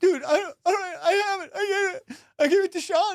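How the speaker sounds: tearful voice. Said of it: "he started crying".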